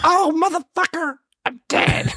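voice jumping way up, very high and drawn-out. Retelling a friend's line after a paintball hit: imitating a high-pitched voice. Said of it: "I swear his voice got high-pitched".

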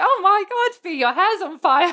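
put-on high-pitched shriek. Retelling what a friend screamed in a bar: imitating Maddie screaming. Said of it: "Maddie screams at me".

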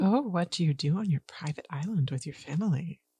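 soft, creepy, unsettling tone. Replying to an invitation to a family's private island, creepy tone. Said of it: "Why'd you make it sound creepy?".

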